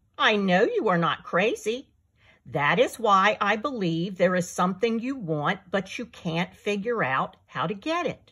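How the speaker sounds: ordinary delivery, nothing marked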